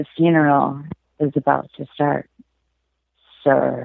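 low put-on man's voice. After warming up, performing the requested man impression. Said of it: "man impression".

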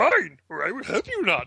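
high character voice with swooping pitch. Doing a requested Yoda impersonation after searching for a line: Yoda impersonation. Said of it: "let's each of us do a Yoda impersonation".

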